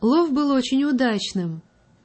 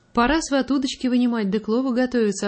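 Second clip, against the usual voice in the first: ordinary delivery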